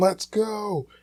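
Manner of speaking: mock very high, wild, screamed sports cheer. Telling a story about watching the Phillies, retelling his own scream. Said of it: "I'm screaming".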